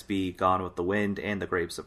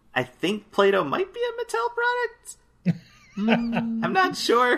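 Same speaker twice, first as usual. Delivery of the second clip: much higher voice, pushed way up high. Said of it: "keep making your voice go up".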